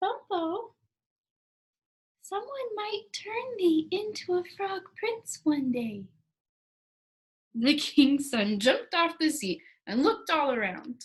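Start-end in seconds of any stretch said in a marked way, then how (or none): 0.0-6.0 small, high little voice. Narrator reading a story where Polynesia speaks to Bumpo; Polynesia's small, high voice. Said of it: "talking in a small, high voice".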